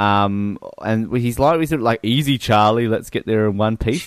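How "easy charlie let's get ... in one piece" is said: ordinary delivery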